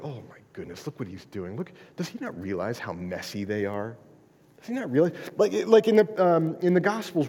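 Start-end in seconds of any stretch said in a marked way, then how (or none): 0.0-5.1 whiny, low, fast grumbling mutter. Speaker acts out the religious elite grumbling to each other, mock grumbling. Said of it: "grumbling to each other".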